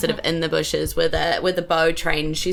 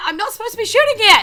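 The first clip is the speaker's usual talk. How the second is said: put-on high, fast, flustered yelling in a young voice. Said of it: "she sort of goes".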